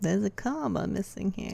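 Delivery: gravelly, creaky delivery. Repeating another speaker's correction in an editor voice. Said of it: "In that voice".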